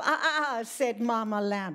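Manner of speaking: plain reading voice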